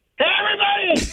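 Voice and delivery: shouting. Yelling the bowler's quote aloud in a store when asked: yelling out loud. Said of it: "we're gonna need you to yell that out".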